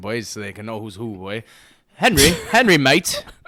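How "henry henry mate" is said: very loud, bad, put-on British accent. Speaker addressing the guys: bad British accent. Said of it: "I was gonna do it in British accent".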